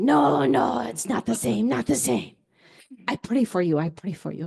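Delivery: thick put-on Korean accent. Retelling what a woman said to the speaker: imitating strong Korean accent. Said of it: "who has a very Korean accent".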